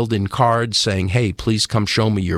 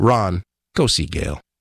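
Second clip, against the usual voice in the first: put-on, a little more firm tone; 2 semitones lower than usual. Retelling the voice repeating its command: imitating a firmer voice. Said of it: "a little more firm this time".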